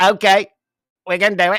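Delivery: rough put-on loud, high-pitched announcing voice. Retelling what Donald Trump said in reply, Donald Trump impression. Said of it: "I can't do a Trump like you can".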